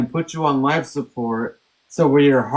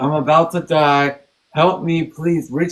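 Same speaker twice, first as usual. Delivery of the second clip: mock desperate, tearful pleading tone. Retelling pleading with his brother Chris to believe he was dying, a desperate tearful plea. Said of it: "I was pleading with my brother".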